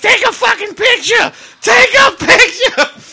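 very high, shrill, very loud, thrilled excited yelling. Retelling a mom in the front row urging pictures: imitating excited mom yelling. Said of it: "She was so excited".

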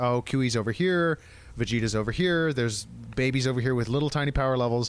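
normal talking voice

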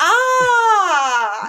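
poorly done mock movie yell, loud and high.

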